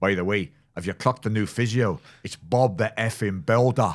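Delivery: booming, loud, resonant voice. Recalling a nervous wait in the old foyer, imitating Big Dunk's big booming voice. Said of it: "this big booming voice".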